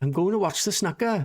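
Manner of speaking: strong South Wales valleys accent. Showing how a deep valleys accent would say a phrase: deep welsh valleys accent. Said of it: "like a deep valleys accent would say".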